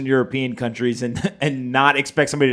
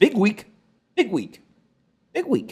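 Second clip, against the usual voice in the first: squeaky, swooping high voice, squeaking on the repeats; 8 semitones higher than usual. Answering a question about the news, voice squeaking. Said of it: "Did your voice just squeak?".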